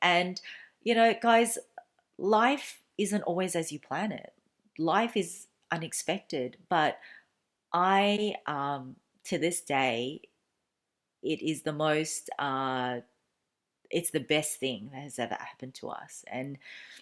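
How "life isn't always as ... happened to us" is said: slow, moved, heartfelt voice. Telling viewers about an unexpected pregnancy and proposal: getting emotional. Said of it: "sorry, I'm getting emotional".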